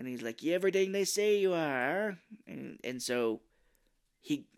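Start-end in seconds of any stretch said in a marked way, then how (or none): 0.4-2.2 put-on Brooklyn gangster accent, higher and louder. Retelling a film scene: imitating Colin Farrell's Penguin Brooklyn accent. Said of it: "he's doing kind of like a Brooklyn accent".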